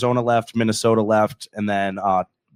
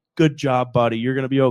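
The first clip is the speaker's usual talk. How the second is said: mock condescending, patronizing, pat-on-the-head soothing tone; 2 semitones higher than usual. Retelling how rival fans talked after the loss: imitating condescending fans.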